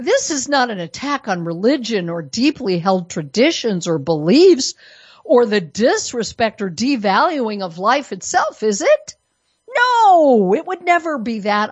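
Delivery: sarcastic, swooping sing-song, "no" stretched out. Addressing an audience, mocking an opposing view: sarcastic. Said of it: "I apologize for all the sarcasm".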